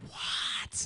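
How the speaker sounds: put-on whispering. Acting out answering a whisper back: imitating a whispered reply. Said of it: "respond back with a whisper".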